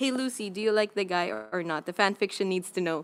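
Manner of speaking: ordinary delivery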